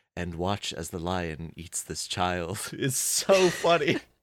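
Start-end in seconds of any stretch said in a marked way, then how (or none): 0.1-2.5 detached, dispassionate British documentary narrator voice. Retelling a dream narrated like a nature documentary: dispassionate British narrator voice. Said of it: "a British man just being like".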